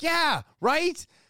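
high, excited, disbelieving voice. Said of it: "And I'm like".

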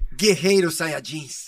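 very loud, belted-out cartoon hero shout. Completing a sentence in a game, answering in a Goku voice. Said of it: "Agora com a voz do Goku".

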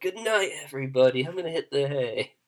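put-on tipsy, sozzled, drunken voice. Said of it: "he's a great man when he's not drunk".

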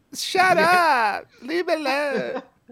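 very high, drawn-out, weepy crying whine. Retelling how the kids reacted when he left, imitating crying kids. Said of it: "the kids like crying".

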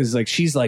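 ordinary talk, nothing marked

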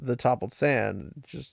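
plain reading voice

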